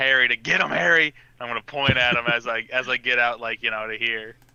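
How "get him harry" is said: yelled, forceful delivery. Yelling in character for Harry to attack: yelling in character. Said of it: "I'm gonna yell for".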